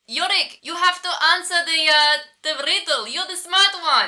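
high, loud yelled voice. Voicing Drizzly calling to Yorick about the riddle: yelling. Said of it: "Drizzly yells out".

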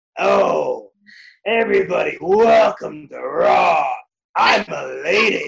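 loud, rough voice, every word dragged out slowly. Retelling how she now sounds, doing an impersonation of Vince: Vince McMahon impersonation. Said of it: "doing an impersonation of Vince".

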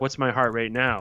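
mock almost seductive voice. Retelling a game scene where the therapist asks RoboCop: imitating an almost seductive tone. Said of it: "almost seductive".

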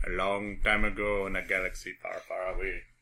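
put-on Jamaican accent. Commenting on a movie's opening with others, Jamaican accent. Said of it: "Why are you Jamaican?".

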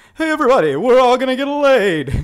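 loud, high, comic shout, projected widely. Retelling a comedy film scene: Rodney Dangerfield impression. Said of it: "I do a pretty good Rodney Dangerfield".

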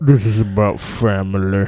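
heavy, low, slow, deliberate voice. Doing a quick impression for the others: Vin Diesel impression. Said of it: "That was my Vin Diesel impression".

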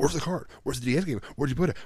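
mock frantic, demanding, high-pitched freaking out. Recounting a guy searching for a missing ds game, retelling him freaking out. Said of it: "he starts like freaking out".

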